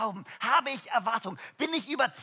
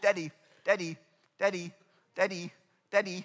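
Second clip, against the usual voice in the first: imitated child voice, repeated calling; 5 semitones lower than usual. Retelling how a child keeps calling for a focused father: imitating a child calling daddy. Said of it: "wenn dein Kind nicht ruft".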